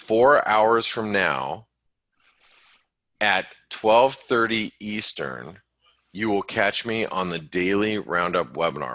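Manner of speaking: slow, deliberate delivery, each word separated. Host repeats the webinar time for listeners, saying it slowly. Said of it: "let me say that slowly".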